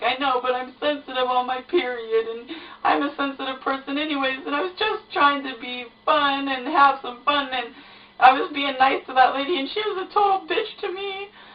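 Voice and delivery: high, tearful voice talking through sobs. Retelling what she told him after a rude lady upset her, acting out her own sobbing. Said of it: "I'm crying my eyes out".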